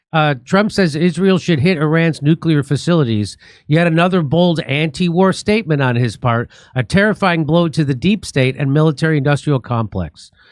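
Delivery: ordinary talk, nothing marked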